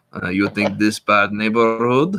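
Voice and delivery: fake Russian accent with broken English. Retelling a comedian's bit in a rough area: imitating a fake Russian accent. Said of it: "he pretends to be Russian".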